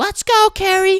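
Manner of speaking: acted, very high, irritating, grating yelled cheer. Retelling someone at an announcement yelling a name: imitating an annoying yell. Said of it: "in the most annoying voice and cadence ever".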